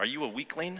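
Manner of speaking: teasing, joking tone. After easily opening a lock, a boy teases the man, jokingly. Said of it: "adding jokingly".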